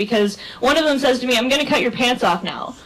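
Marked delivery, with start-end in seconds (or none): none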